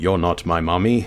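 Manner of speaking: dramatic anime duelist voice. While playing a game, talking back to an enemy in a Yami Yugi voice. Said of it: "Why did I say that like Yugi?".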